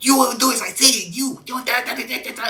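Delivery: very high, shrill, loud yelling. Retelling a small trainee sergeant yelling up at the platoon: imitating a high-pitched yelling sergeant. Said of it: "he's yelling at us".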